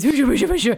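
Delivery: acted, loud, high-pitched, excited goading voice. Retelling how another player wound the dog up: imitating excited dog-baiting voice. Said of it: "I'm really wound up from Titus's".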